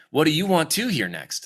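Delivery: stiff read, odd intonation. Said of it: "internal editor that's making you say things like".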